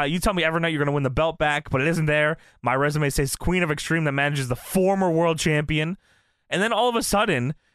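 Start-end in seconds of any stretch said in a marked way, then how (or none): none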